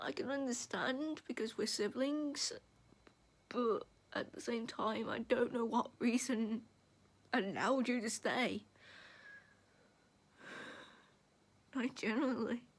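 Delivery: speaking through tears. Telling a sibling they don't know why the sibling stayed, crying. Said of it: "I'm crying because I don't normally cry".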